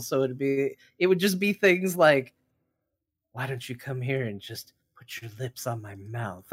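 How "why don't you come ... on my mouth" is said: put-on breathy, heavy-breathing female voice, quieter, faster. Quoting a line from a very sexual book, in a heavy-breathing lady voice. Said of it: "his heavy breathing lady voice".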